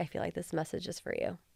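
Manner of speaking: soft, hushed, barely voiced whisper. Retelling what someone who grabbed their hand whispered: imitating a whisper.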